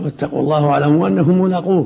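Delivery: ordinary delivery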